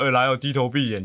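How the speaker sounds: put-on mocking, sneering tone. Retelling how classmates answered the seniors' bowing rule: imitating a mocking retort. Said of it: "甚至还会有时候嘲讽说".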